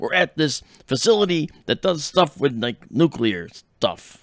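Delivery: loud, exaggerated crisp articulation. Retelling a lab visit as Jesse Ventura: Jesse Ventura impression, deep, over-enunciating. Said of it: "deep, and he over-enunciates".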